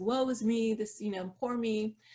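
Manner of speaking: ordinary talk, nothing marked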